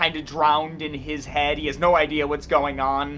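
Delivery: ordinary delivery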